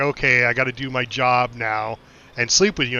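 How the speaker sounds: usual speaking voice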